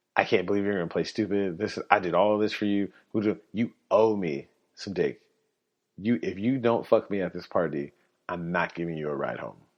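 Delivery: mad, furious, angry tirade. Retelling her reply when he did not agree: imitating someone angry. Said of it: "So this is when she gets mad".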